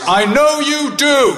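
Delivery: mock loud high voice. Leaving the hospital ward, the speaker quotes the dad calling out in a loud voice. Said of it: "in a loud voice".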